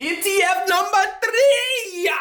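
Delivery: excited screaming. Announcing the next item on a list: excited screaming. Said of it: "I don't know why I'm screaming".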